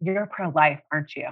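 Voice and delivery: put-on low whisper. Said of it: "her voice comes down kinda low".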